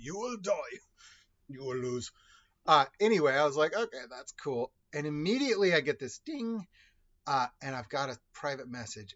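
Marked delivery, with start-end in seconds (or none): 0.0-2.1 put-on strong, heavily laid-on Russian accent. Recalling how a player voiced his elf character, in a strong-accented Ivan Drago voice. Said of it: "sounded like Ivan Drago from Rocky".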